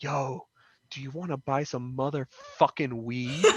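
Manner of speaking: slow, hushed, drawn-out half-whisper. Retelling a stranger who slipped through a crowd to his ear, retelling a stranger's half-whisper. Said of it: "he comes into my ear and he just whispers".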